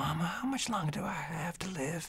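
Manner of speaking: put-on tiny, very high, soft baby voice. Speaker demonstrates how a character would sound in an early recording; little baby voice. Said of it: "he would sound kind of like a little baby".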